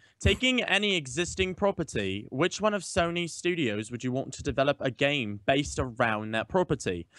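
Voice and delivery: fake, put-on British accent. Reading his question aloud to the group, in a put-on British accent. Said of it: "I'm going to read mine in a British accent".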